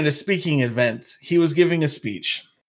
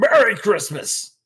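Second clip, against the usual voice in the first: mock loud shout, emphatic, pointed but contained; 4 semitones higher than usual. Retelling how an old guy behind answered the desk person: imitating a loud shout. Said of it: "this old guy behind me loudly".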